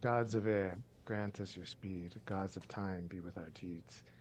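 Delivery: very quiet, hushed half-whisper. A character touches his forehead to yours and speaks, half-whispering very quietly. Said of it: "he whispers like really, really quietly".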